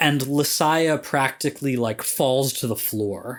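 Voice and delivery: ordinary talk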